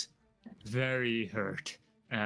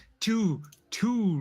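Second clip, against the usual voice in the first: pitched-up theatrical puppet voice; 8 semitones higher, 4 dB louder than usual. Announcing damage in a dice game, sounding like the Count from Sesame Street. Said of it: "Why did you sound like the, the guy from, uh, uh, um, Sesame Street?".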